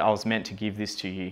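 normal talking voice

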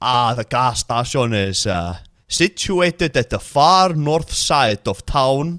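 put-on non-native foreign accent on learned English. Showing how someone answers when asked for directions, in a put-on accent. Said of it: "one of those accents".

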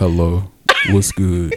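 heavy, swooping dude voice. Retelling a phone call where she answered in a heavy dude voice. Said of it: "a dude, like, heavy dude voice".

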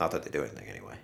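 deep, hushed, low mumble under the breath. Retelling what a pharmacist said while walking out the door: imitating a mumble under breath. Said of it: "he mumbles under his breath".

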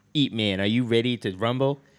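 booming, loud, heavily impeded speech. Retelling a movie scene to the other speaker: Mike Tyson impression with speech impediment. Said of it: "his speech impediment from getting hit".

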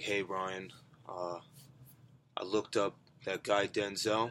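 ominous, menacing, very slow, low and hushed. Retelling what his brother said in the kitchen, mock-menacing. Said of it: "So menacingly".

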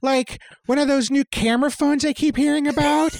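breathy, high-pitched feminine voice. In a read-aloud story, she keeps talking: breathy Jennifer Coolidge voice. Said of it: "her voice breathy and feminine".

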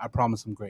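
mock unconvincing delivery. Retelling how a player said the line: imitating an unconvincing delivery. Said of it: "that's not convincing at all".

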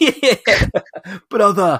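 put-on Yorkshire accent. A speaker offers last words in his yorkshire accent. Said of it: "that's my Yorkshire accent".

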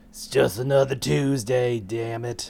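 put-on grizzled ninja voice. Retelling the game's banter as the player character: imitating a grizzled ninja. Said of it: "some grizzled ninja".

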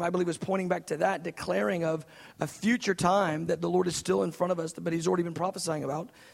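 rushed, too-fast, preachy delivery. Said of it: "I'm talking too fast".

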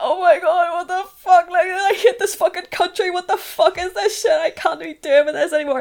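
put-on crying, high and loud sobbing outburst. Retelling driving home in a panic, the speaker acts out what they said, retelling own sobbing. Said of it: "I was sobbing in my car home".

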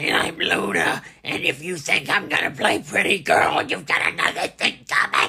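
very loud, shrieky, brash voice at full blast. Remembering a favorite ring escort, speaker imitates how she talked: imitating Luna's shrieky voice. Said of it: "She had a real voice that kind of sounded like this".

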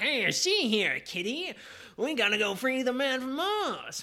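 put-on high-pitched, thick New York accent. Describing how the audiobook voiced Ben Caxton, in a heavy New York accent. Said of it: "the heavy, like, New York accent".

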